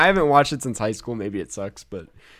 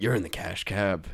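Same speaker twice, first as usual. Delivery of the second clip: put-on menacing trailer voice, much lower; 5 semitones lower, 7 dB quieter than usual. Picturing a movie trailer, the speaker delivers its final line in a mock-menacing voice. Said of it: "in a menacing voice going".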